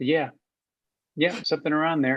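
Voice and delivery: deadpan. Retelling the co-star's reply in the car: stone-faced Stacy reply.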